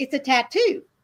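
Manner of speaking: mock casual, unbothered, nonchalant, offhand. Retelling a phone call with her son, imitating a nonchalant reply. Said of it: "very nonchalantly, he says".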